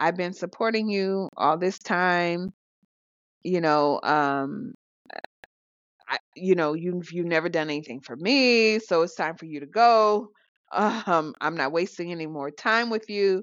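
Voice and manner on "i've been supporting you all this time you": usual speaking voice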